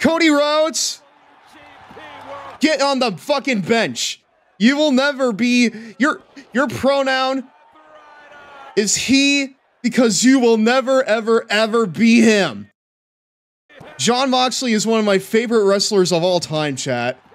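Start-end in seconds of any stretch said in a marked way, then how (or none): 0.0-12.7 emphatic shouting, higher and louder. Repeating a wrestling result to chat after muting music: loud emphatic announcement. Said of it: "I'll spell it out for you one more time".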